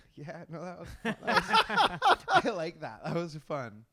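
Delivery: mock very loud, drawn-out, swooping laugh-it-off. Retelling feeling like a hit kid: imitating oneself laughing it off. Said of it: "laughing it off".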